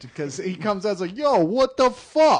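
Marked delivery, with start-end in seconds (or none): 1.2-2.4 exaggerated New York gangster accent, very loud, very slow. Imitating the only actor in the movie without a British accent, an exaggerated New York Robert De Niro impression. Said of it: "I guess there's a New York in Fairyland".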